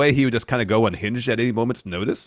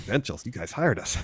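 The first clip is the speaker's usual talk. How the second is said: put-on muttering under the breath; 7 dB quieter than usual. Retelling a backstage exchange, imitating Dante muttering under his breath. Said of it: "under his breath goes".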